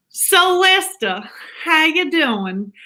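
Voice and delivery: slow, high-pitched southern American drawl. Speaker practicing a southern accent, greeting lester: attempted southern accent. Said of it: "I've been trying to learn my southern accent".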